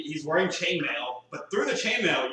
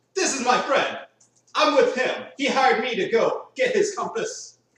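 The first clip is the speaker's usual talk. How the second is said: put-on Polish accent on every word, raised, high; 8 semitones higher, 6 dB louder than usual. In character, introducing the friend who hired him, in a Polish accent. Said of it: "That's a Polish accent for you".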